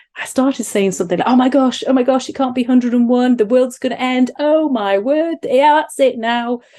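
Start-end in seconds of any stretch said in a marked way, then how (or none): 1.3-6.6 really high-pitched, goofy, silly fussing voice. Retelling what they said to her, in a put-on high-pitched silly voice. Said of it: "in a really high-pitched, silly voice".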